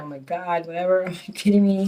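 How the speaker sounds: acted-out weepy words, crying through tears. Retelling being dismissed from the doctor's practice: imitating own past crying. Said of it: "I'm, like, crying".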